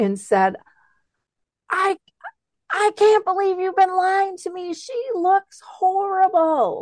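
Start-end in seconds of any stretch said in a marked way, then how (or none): 1.7-6.8 very high-pitched screech at the top of the lungs. Retelling what she screamed at you in the restaurant: retelling a scream. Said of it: "she like screamed at me at the top of her lungs".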